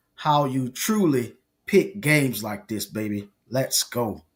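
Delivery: deep, slow TV commercial announcer voice. Announcing game picks for fun: like an Allstate commercial. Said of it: "You sound like that Allstate commercial".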